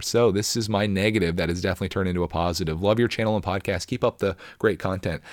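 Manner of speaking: ordinary delivery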